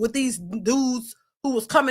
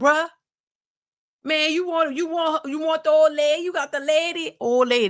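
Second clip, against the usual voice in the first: put-on loose, old-school casual slangy talk; 3 semitones higher than usual. Recalling to his audience how he used to talk, imitating his old way of talking. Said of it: "Remember, I used to say old lady".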